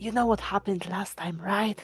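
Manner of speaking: whispering in a put-on voice. Playing a character, quietly warning companions so Maddie can't hear: whispering in character. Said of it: "And I whisper".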